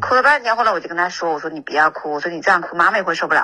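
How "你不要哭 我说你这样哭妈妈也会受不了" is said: ordinary delivery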